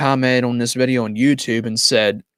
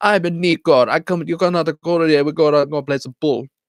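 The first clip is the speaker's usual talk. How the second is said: put-on heavy Jamaican accent, laid on thick; 4 semitones higher than usual. Recalling a game character who always talked funny, in a Little Jacob heavy accent. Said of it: "he always talked with like a heavy accent".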